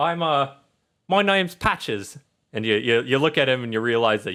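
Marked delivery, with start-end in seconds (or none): 0.0-2.2 put-on teddy bear voice, higher. Voicing a rundown teddy bear who wakes a player: Patches teddy bear voice. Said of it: "It's like".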